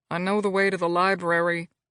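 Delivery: between clenched teeth. Reading a story aloud, the grandson answering the butler: said between clenched teeth. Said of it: "said between clenched teeth".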